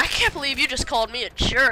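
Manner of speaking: put-on freaked-out, upset outburst. Retelling how a man reacted on a plane, imitating a freaked-out man. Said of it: "freaking out".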